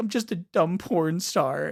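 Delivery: put-on mopey, downcast, sad, soft and drawn out. Retelling what a character said to the teacher: imitating someone sad. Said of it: "sad 'cause she's like".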